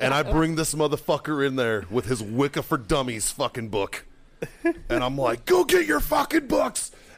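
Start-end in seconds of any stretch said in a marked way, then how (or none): 5.4-6.9 very high, furious screaming rage. Retelling yelling at a kid over his library books: imitating someone yelling. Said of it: "I yelled at this kid".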